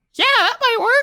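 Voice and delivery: tiny, very high little squeaky voice. Narrating a scene and voicing a tiny creature speaking from below: tiny voice. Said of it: "you hear a tiny voice from below you say".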